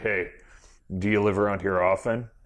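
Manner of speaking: tongue-in-cheek put-on low, smooth-talker voice. Making fun of smooth talk toward a girl, in a mock smooth low voice. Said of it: "I'll do the, the low voice".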